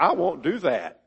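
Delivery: play-acted insolent, disrespectful, defiant voice. Retelling a bible parable, voicing the first son's refusal, mock-disrespectful. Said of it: "You can just hear the disrespect in his voice".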